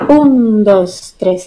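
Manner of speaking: stress on un, dos tres lighter. Counting the beats of a dance, stress on the first count un. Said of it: "aquí el primer tiempo es más fuerte, como un, dos, tres".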